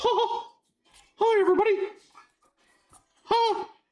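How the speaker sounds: squeaky voice, pitched very high. Going through trading cards, the speaker attempts a Mickey Mouse voice. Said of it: "I used to be able to do a Mickey".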